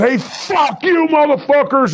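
rowdy, high-pitched, drawn-out heckling yell. Retelling heckling wrestlers from the crowd: imitating yelling at wrestlers. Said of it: "we'd be yelling at those wrestlers".

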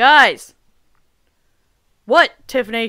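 very loud, full-volume shouting. Arguing with another speaker about fixing a tire: yelling. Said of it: "Don't yell at me".

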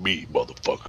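very low, deep, brooding voice. Retelling a man in the background answering who disconnected the battery: deep brooding voice. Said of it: "this deep brooding voice in the background said".

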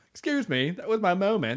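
put-on extra-heavy, overdone British accent. Quoting a clip of Sam: imitating an exaggerated British accent. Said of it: "more British than normal".

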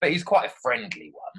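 East London accent, pitched very high. Describing a frog called Phil in a story to be written, in Phil's East London accent. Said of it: "East London accent and he talks a bit like this".

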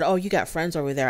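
plain

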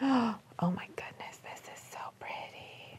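breathy, hushed whisper, barely voiced, very quiet. Alone in a shop, looking at clothes for a rack, whispering. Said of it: "Why am I whispering?".

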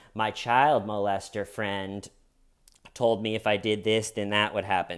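ordinary delivery

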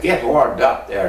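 ordinary talk, nothing marked

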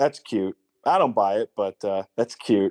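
mock dry, expressionless, totally flat deadpan delivery. Quoting a line he says every day from a film: deadpan Matt Dillon quote. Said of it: "just says totally deadpan".

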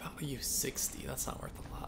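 sneaky, sly whispered voice.

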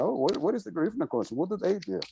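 mock sarcastic voice. Speaker voicing people who question the coalition, sarcastically quoting doubters. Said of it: "And I'll say this sarcastically".

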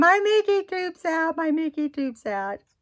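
acted, hysterical, very high panicked child's scream. Retelling how a child panicked about a medical tube: imitating a child screaming. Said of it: "He started screaming".

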